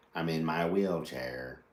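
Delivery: low, computer-like voice. Joking about editing on a computer: Stephen Hawking computer voice. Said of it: "Like it's a computer voice".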